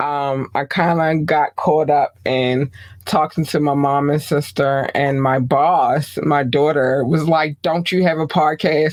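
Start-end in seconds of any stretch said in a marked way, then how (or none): 7.6-8.9 acted-out pushy, confrontational, aggressive demanding tone. Retelling how her daughter asked her, mock-aggressive demand. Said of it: "she said it real aggressively".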